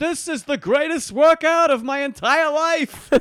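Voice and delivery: very high, loud, drawn-out yell. Describing the hate trainer who slams the ball, retelling his yell. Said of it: "he just yells at it".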